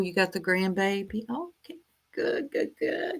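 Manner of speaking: quiet voice with lively tune. Answering a live chat comment about a sleeping grandbaby: lowered voice. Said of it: "lowering my voice like I'm there".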